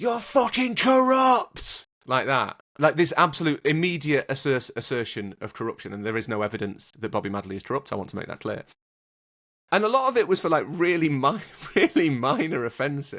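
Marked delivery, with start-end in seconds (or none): 0.0-1.9 very high, loud, furious shrieking scream. Recounting a fan standing up behind them at the referee: retelling a fan's scream. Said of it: "stand up behind us and scream".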